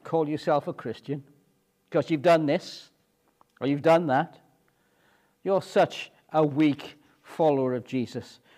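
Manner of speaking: ordinary talk, nothing marked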